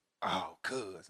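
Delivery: mock man-like voice. Retelling a woman's reaction during sex, imitating a manly voice. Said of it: "Use your lady voice".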